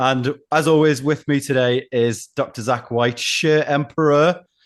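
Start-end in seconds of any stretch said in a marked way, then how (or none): 3.2-4.4 bad put-on French accent, pitched up. Introducing a co-host with a mock title: terrible French accent. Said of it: "Terrible accent".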